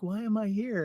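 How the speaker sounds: soft, high, cute little droid voice. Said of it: "cute little voice".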